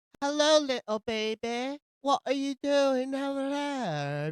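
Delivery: put-on high, slow baby talk.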